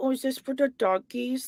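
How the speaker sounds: put-on high, slow, cooing baby-talk voice. Imitating how she talked to the dogs: imitating baby talk. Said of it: "It was like baby talk".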